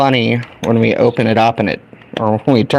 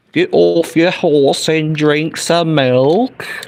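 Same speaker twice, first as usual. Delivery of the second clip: bad high, exaggerated fake Southern American accent; 6 semitones higher than usual. Imitating a british guy making an american accent, bad southern american accent. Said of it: "That's my impression of a British guy making an American guy accent".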